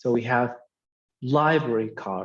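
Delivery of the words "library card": heavy stress on library, card said lighter. Teaching compound noun stress, with stress on library in library card. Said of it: "the stress will be on the first word, not the second word".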